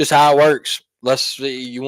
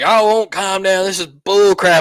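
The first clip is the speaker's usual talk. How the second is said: play-acted, high, indignant, fed-up, ticked-off tone; 6 semitones higher than usual. Retelling an argument about rowing the boat: imitating an angry fan. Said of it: "they got all ticked off".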